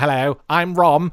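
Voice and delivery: loud, ridiculous, absurd la-di-da posh character voice. Retelling a panel reading of a comic, giving Rom a posh Dalek voice. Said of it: "a posh Dalek kind of voice".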